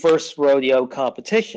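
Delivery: plain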